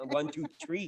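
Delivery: Québécois-style French Canadian accent. Showing a listener that the speaker can do it, in a french canadian accent. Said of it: "speak to you in the French Canadian accent".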